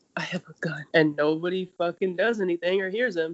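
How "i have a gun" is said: hushed, under-the-breath whisper. Retelling a show scene where the main character stands in a police station: imitating a whisper.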